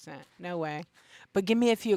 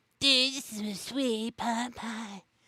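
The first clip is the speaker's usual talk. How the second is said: slow put-on voice, every word drawn out; 4 semitones higher, 3 dB quieter than usual. Showing the voice done when playing around: Cartman voice. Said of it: "it was Cartman".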